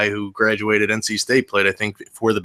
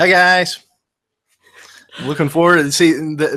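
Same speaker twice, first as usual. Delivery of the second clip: excited, keyed-up, pitched-up delivery; 6 semitones higher, 3 dB louder than usual. Greeting the audience after being asked to say hello: excited voice. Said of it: "that voice was my excited voice".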